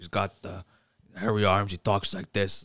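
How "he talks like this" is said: put-on tough New York voice, lower and quieter. Describing a movie character disguised as Al Pacino: Al Pacino voice. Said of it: "like Al Pacino".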